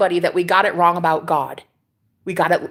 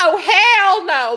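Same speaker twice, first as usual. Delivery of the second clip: very high, scandalized, disapproving grandma voice; 9 semitones higher than usual. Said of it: "in her own, you know, voice".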